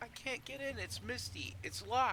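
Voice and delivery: very high, small squeaky tiny voice. Narrating what the group hears after asking who is there: small voice. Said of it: "small voice say".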